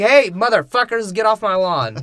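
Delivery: loud, high yelling. Retelling a movie scene where a character shouts at people: imitating Obi-Wan shouting. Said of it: "first Obi-Wan comes in and shouts at people".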